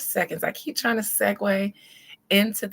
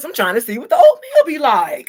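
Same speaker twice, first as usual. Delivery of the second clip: very loud, sing-song, swooping put-on voice; 5 semitones higher, 12 dB louder than usual. Trying the line in an Armand voice. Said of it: "in my Armand voice".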